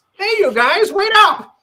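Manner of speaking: very high, very loud cartoon voice. Show how the earlier cast's actor sounded in the role you took over, in a Canadian Krillin voice. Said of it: "the Canadian Krillin sounded like this".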